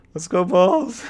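shrill, very high, loud voice breaking mid-word. Retelling a guy cheering at the basketball game, imitating a voice crack. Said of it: "like that voice crack".

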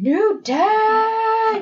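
put-on shrill, very high, loud scream with "day" stretched long. Retelling a wrestling segment with pancakes in a briefcase: imitating The Miz screaming. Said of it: "he's screaming".

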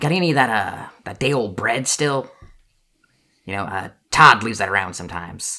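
chorus of squeaky rat voices. Telling a story in which the Rat King speaks, squeaky Rat King voice. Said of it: "it's like a legion of squeaky rat voices".

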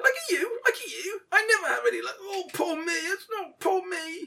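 tiny, squeaky creature voice, very high pitched. Speaker acts out one of two bickering voices in a weird little high-pitched voice. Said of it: "The other one says".

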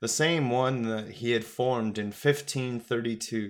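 ordinary delivery

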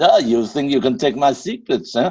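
put-on Russian accent. Giving a snippet of a Russian accent after being asked. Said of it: "Yes, I can talk Russian".

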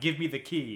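ordinary talk

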